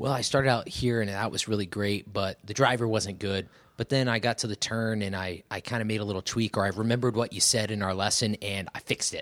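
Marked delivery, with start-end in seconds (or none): none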